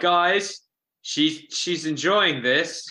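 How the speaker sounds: acted frustrated shout, high and drawn out. Playing a character in a tabletop fight, warning the party: yelling in character. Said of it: "So I yell".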